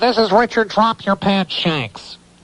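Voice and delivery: very high-pitched, nasal, nose-pinched voice. Retelling a phone call from a caller, pinching the nose: nasal voice imitating Richard Shanks. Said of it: "I have to get into character for this".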